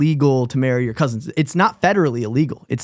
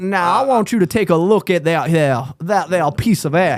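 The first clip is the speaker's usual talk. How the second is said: put-on Cajun accent; 3 semitones higher than usual. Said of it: "with a Cajun accent".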